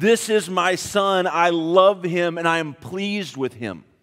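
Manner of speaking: ordinary talk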